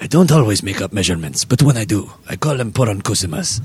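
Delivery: put-on spokesman narrator voice with Spanish accent. Speaker riffs about made-up measurements, doing a Dos Equis guy impression. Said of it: "sounding like the Dos Equis guy".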